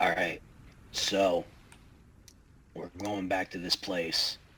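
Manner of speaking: theatrical whisper. Speaking in character to the party, announcing the next destination: stage whisper. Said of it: "and then Stage Whisper".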